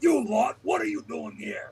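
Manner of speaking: harsh, berating scolding tone. Voicing a chieftain puppet, shouting at returning underlings: shouting at the guards in character. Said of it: "shout at the".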